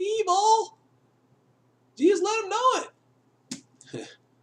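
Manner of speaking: very high, shrill, swooping, climbing voice crack. Speaker talking to viewers before two videos: shrill high voice. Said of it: "sorry if I shattered a glass".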